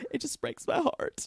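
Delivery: whispered, breathy voice with fake breaking catch. Imitating a mother who fakes her voice breaking: imitating mother's fake voice break. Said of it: "made her voice break like she did".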